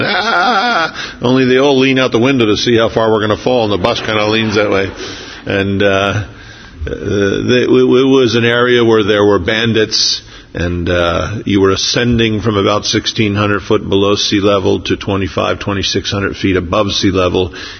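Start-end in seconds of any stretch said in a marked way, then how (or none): 0.0-1.2 very high mock yelp of fright. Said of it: "everybody's yelling".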